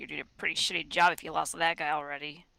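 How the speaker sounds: hushed, mumbled, muttered under the breath. Saying what Acoustic says about the lost guy, mumbling under his breath. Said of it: "mumble under his breath".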